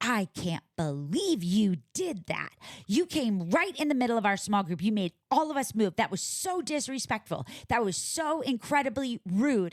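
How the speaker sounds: offended, indignant scolding tirade. Retelling how a mom confronted the speaker at the gym: imitating someone yelling. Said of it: "she is yelling at me".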